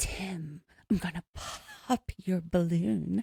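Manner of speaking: put-on breathy, sexy voice. Imitating a cast member as Ginger teasing Tim: imitating Ginger's breathy voice. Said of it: "breathy voice".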